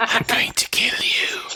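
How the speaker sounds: high, slow, menacing whisper. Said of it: "whispering in their ear".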